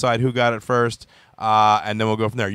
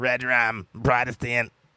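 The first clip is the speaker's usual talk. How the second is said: put-on creepy child voice, quieter; 4 dB quieter than usual. Mocking a friend's attempts to say Protestant with the kid from The Shining voice. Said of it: "turning into the kid from The Shining".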